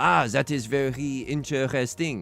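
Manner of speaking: slow, put-on French accent on English words. Speaker demonstrating accents from improv class, in a French accent. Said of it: "I can't do French. I can do".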